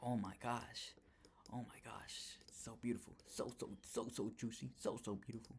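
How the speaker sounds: hushed whisper. Streaming to chat about a price move, whispering. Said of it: "I don't know why I'm whispering".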